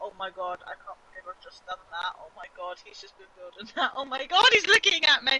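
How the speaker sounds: mock disbelieving words broken by shocked laughter. Retelling own reaction after accidentally wrecking a teammate's build: retelling own shocked laughter. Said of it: "I'm laughing from the sheer shock".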